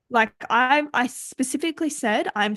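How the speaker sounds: ordinary talk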